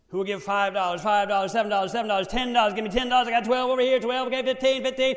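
high, loud, rapid auctioneer patter.

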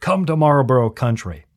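mock advertisement announcer voice. Recalling old cigarette commercials, attempting the ad narrator's line: Marlboro ad narrator voice. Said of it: "That's my best version".

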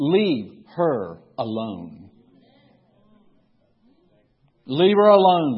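low, firm no-nonsense tone. Narrating Jesus answering the murmuring disciples, in a no-nonsense voice. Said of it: "in that no-nonsense voice".

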